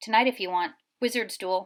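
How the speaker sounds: ordinary delivery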